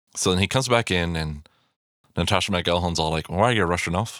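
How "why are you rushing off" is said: put-on poor Irish accent. Retelling a scene, the speaker quotes Natasha McElhone in a bad Irish accent. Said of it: "that's a bad Irish accent on my part".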